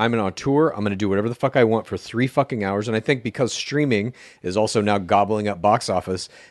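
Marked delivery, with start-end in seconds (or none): none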